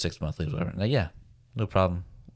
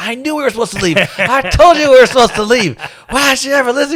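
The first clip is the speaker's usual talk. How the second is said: furious, shrill, very high-pitched, very loud angry outburst; 15 dB louder than usual. Retelling what a partner said while hitting the speaker: imitating someone angry. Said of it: "She was so angry".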